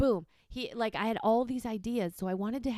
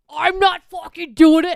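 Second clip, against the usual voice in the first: put-on angry outburst, higher and louder; 7 semitones higher, 17 dB louder than usual. Retelling how the partner reacted to the notes: imitating someone angry. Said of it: "you were so angry".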